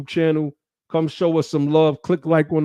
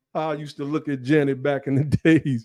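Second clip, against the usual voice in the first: plain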